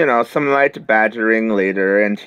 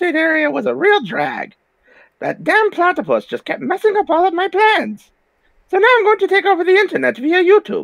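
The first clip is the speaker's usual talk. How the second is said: very high, straining put-on voice. Performing an impression for a listener, in a strained impression voice. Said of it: "Not a bad impression, though. And though it was clearly your voice was straining".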